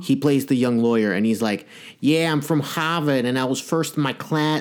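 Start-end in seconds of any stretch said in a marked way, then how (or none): 2.0-4.6 terrible, bad fake Boston accent, laid on. Retelling the young lawyer's lines from the movie: Rob Morrow's bad Boston accent. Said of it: "this is a terrible accent".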